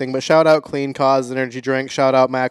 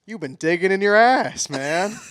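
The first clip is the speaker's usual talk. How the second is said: approving, proud, pitched-up delivery; 7 semitones higher than usual. Repeating the same phrase in a called-out emotion, proud.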